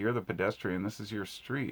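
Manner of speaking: ordinary delivery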